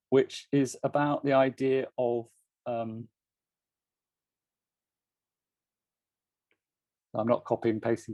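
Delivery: stammering. Speaker apologizing while reading out a long quote, stammering. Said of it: "This is my stammering".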